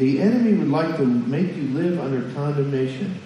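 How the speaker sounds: normal talking voice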